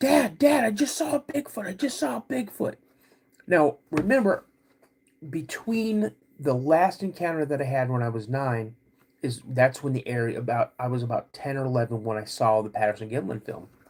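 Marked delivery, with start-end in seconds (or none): 0.0-2.8 put-on, very high, shrill shouting. Retelling calling to Dad after seeing a Bigfoot: imitating own yelling. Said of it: "I start yelling".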